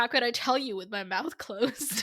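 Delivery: plain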